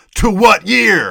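angry man's yell, very high, shrill and very loud. Retelling how a dad character yells at his kids: imitating a dad yelling. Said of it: "Then he yells".

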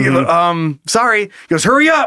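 normal talking voice

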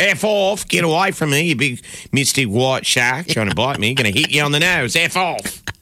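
put-on full-on New Zealand accent, fed-up ranting. Retelling a New Zealand surfer's words to a shark: imitating a New Zealander's accent. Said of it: "New Zealander being like".

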